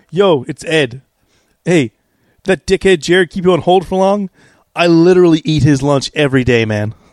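loud, confident, in-your-face, very aggressive voice. Retelling a phone call where he takes over as supervisor, imitating Ed Chambers, super aggressive. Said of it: "super aggressive".

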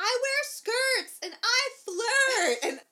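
very high, very loud, very slow crying yell. Describing a woman alone in a salon bathroom, retelling someone yelling. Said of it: "she's yelling in the bathroom".

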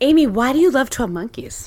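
put-on public radio interviewer delivery. Asking Amy a question, in an NPR voice. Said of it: "I tried to do my NPR voice".

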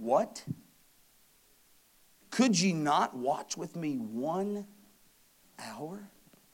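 stunned, astonished, shocked and disbelieving tone. Reading a verse aloud, the speaker acts out Jesus's words to the sleeping disciples: acting out a shocked tone. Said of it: "Listen to this shocking tone".

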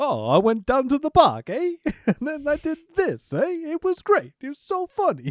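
put-on very high, goofy New York comic accent. Explaining who a comedian is by imitating him: imitating Jackie Mason. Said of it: "who'd be like".

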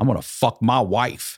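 slow, deliberate, angry put-on delivery. Retelling what a coworker said about his night: imitating an angry line. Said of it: "he said it, like, angrily".

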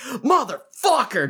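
acted-out furious shout, angry and pissed off. Retelling ripping headphones out at the gym: imitating an angry yell. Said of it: "pissed off, yelling "motherfucker"".

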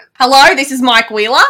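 loud Australian accent. Trying an accent right after saying they can't do one, Mike Wheeler in Australian accent. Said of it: "you have a good Australian accent".

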